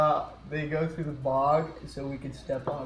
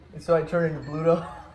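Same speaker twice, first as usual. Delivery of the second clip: normal talking voice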